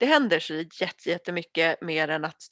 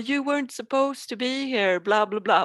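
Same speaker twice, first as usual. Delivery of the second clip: put-on angry fatherly voice losing temper, pitched up; 6 semitones higher than usual. Retelling a story where the father sees them arrive; mock-angry father. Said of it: "lackar pappan och bara".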